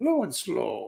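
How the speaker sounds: clumsy, bad put-on Italian accent. Imitating an Italian barbecue fan, attempted Italian accent. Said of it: "I can't do an Italian accent".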